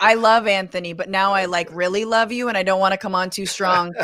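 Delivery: ordinary talk, nothing marked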